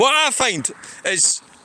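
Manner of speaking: loud outdoor voice over traffic noise. Talking outside by the road and apologising for it: shouting. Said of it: "sorry I'm shouting".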